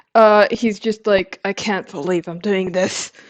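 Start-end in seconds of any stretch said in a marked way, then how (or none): 1.5-3.1 muttering under breath. Voicing a character in a roleplay game, muttered under breath. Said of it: "he mutters under something under his breath".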